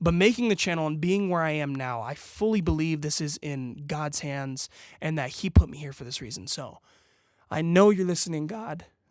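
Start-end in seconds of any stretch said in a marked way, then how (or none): 6.5-8.8 voice breaking up, cracking mid-line. Speaking directly to god about being put here, voice cracking. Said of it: "This crazy voice crack".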